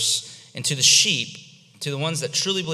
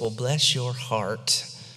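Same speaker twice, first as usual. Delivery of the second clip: put-on Southern lady accent. Explaining a Bible passage, a speaker quotes a hypothetical believer; Southern church lady voice. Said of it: "in your best Southern church lady voice".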